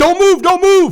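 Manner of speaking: very high, very loud, top-of-lungs shrill scream. Retelling how an officer with a rifle shouted at him: imitating someone screaming. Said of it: "he is screaming at the top of his lungs".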